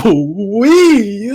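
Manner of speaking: put-on very loud, shouted pleading. Retelling how loudly a coworker begged: imitating a very loud plea. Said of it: "As loud as physically possible".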